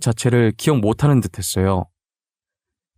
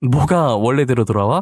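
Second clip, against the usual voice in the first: plain reading voice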